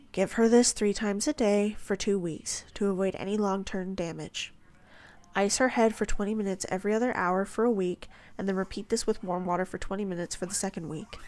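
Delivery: ordinary delivery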